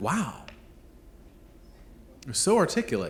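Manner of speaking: play-acted, astonished, admiring tone. Acting out praise said as if it were unexpected: imitating surprised praise. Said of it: "when you say it with that sense of surprise, like you didn't expect them to be".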